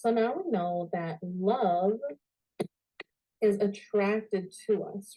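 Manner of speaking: deliberately slow delivery.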